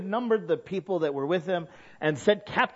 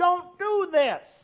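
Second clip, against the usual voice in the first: high, shouted preacher-style delivery; 11 semitones higher than usual. Speaker acting out the pastor beating on the pulpit, retelling a pastor's shout. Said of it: "he beats on the pulpit and he shouts".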